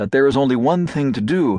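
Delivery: ordinary delivery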